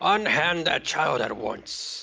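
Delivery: put-on firm, commanding old man voice. An old man comes up from the caravan fire; old man's loud voice. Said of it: "he says in a loud voice".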